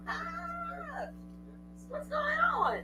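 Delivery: very high, startled, surprised squeak.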